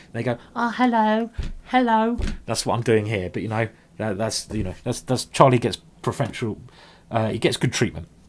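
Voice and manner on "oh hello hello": put-on very high, girly voice used for pets. Talking to Charlie the cat, showing how people speak to animals: a bit girly animal voice. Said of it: "if I do sound a bit girly".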